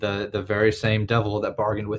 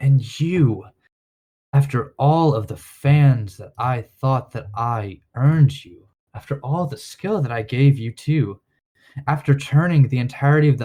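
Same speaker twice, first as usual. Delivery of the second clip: loud, slow, drawn-out demonic voice; 4 semitones higher, 5 dB louder than usual. Voicing the devil who appears from the crack: voicing a devil. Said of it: "he's gonna look at Sistorla and be like".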